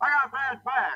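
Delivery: very high-pitched voice. Describing an actor getting into character, doing the Colonel's high voice. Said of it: "so he talked really kind of high".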